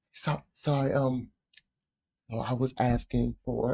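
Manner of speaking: soft, slow, sweet, innocent voice. Acting out politely sending food back: higher, sweeter voice. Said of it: "my voice gets a little higher".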